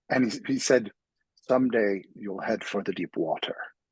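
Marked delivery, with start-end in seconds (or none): 1.4-3.5 put-on Irish accent, brogue. Retelling a man's line to the speaker at seventeen: imitating his brogue. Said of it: "in his, like, you know, brogue".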